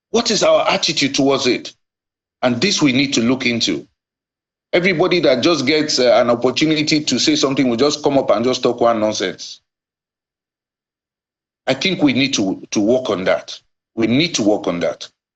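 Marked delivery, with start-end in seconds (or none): 4.7-15.1 very angry, complaining tone. A general complaining that people just talk nonsense, angry. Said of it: "you sound really angry".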